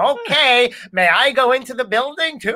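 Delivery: put-on fifties mid-Atlantic accent, high, slow. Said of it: "Don't know why I speak like that".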